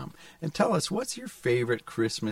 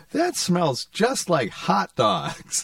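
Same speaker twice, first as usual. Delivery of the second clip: put-on loud, piercing child's voice; 5 semitones higher, 6 dB louder than usual. Speaker retells what they said as a child when the steak arrived, piercing five-year-old voice. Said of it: "in my 5-year-old voice that pierces across the whole restaurant".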